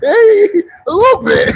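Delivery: high-pitched, laughing voice.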